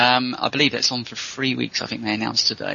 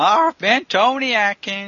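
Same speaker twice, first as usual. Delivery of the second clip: put-on grizzled old prospector voice, higher and louder; 9 semitones higher, 4 dB louder than usual. Signing off the show after the co-host: grizzled 1930s prospector voice. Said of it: "Why are you suddenly a grizzled nineteen thirties prospector?".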